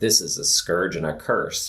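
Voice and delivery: plain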